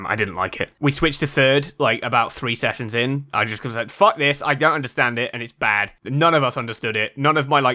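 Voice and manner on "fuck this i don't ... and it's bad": normal talking voice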